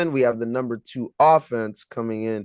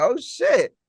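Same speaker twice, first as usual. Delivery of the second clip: mock very high, shocked, caught-off-guard exclamation; 12 semitones higher than usual. Retelling own reaction to being asked first: retelling being shocked. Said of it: "I was shocked".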